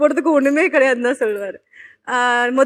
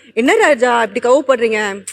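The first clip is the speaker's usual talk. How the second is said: normal talking voice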